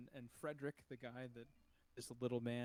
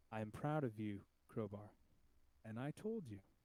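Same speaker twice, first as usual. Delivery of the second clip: gentle, mild, softly spoken voice; 3 dB louder than usual. As a voice addressing Crowbar after the win, very soft. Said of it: "it'll say very softly".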